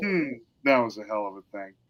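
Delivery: acted soft, completely unbothered, offhand, calm delivery. Quoting a favourite film character after teleporting: imitating an unfazed character. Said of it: "he's just not fazed by anything".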